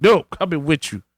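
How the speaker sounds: usual speaking voice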